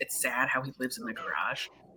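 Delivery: hushed whisper under the breath. Acting out asking to go to her place, retelling a whisper. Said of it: "And I'm like whispering this".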